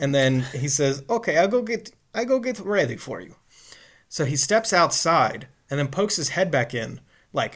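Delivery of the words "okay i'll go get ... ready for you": put-on broken-English Eastern European accent, pitched up. Retelling what a rental car clerk said: imitating an Eastern European accent. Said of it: "so Eastern European accent".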